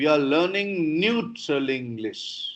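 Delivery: "neutral" stressed, pitch falling afterward. Teaching English statement intonation, stress on neutral, then falling. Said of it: "So I highlighted neutral. From there, the voice falls".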